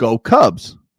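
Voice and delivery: ordinary talk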